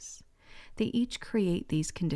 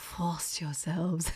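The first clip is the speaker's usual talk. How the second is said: terrible put-on French accent; 2 semitones lower than usual. Telling how you heard the words as the diamond lady in the film, in a bad diamond lady's French accent. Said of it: "with her delicious French accent where she's like".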